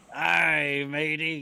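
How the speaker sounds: hearty, very loud, high put-on pirate voice. Telling a joke, giving the pirate's answer in pirate voice. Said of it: "what did the pirate say".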